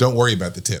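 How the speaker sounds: ordinary delivery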